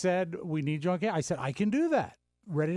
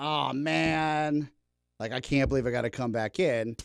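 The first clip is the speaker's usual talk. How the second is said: mock voice full of reluctant dread; 4 semitones lower than usual. Retelling how a coworker answered a request to return: imitating someone full of dread. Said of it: "It wasn't full of dread".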